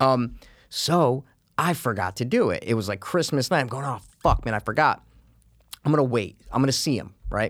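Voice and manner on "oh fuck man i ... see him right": plain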